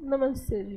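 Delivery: gentle, courteous tone.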